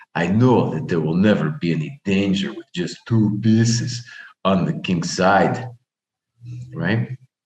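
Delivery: put-on Russian accent, superior and self-assured tone. Speaker quoting a chess player's reasoning about his position, in a put-on Russian accent. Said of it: "This is just my my Russian accent".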